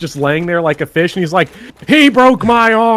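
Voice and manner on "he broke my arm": scream, higher and louder. Retelling an NPC heard on the ground: imitating an NPC screaming. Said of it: "on the ground screaming".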